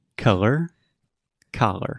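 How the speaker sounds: slow, careful pronunciation. Repeating two words for a learner who asked: saying the words slower. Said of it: "do it slower".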